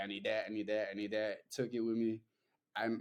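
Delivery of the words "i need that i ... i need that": plain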